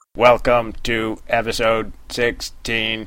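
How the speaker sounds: put-on robotic, computer-like voice. Podcast host opening an episode about computers, in a computer voice. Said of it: "I'm talking like this because we'll be talking about computers".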